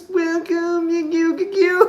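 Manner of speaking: drawn-out, high puppet-show voice. Imitating a performer's odd way of saying welcome: imitating someone talking like a Muppet. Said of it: "It's just talking like a fucking Muppet".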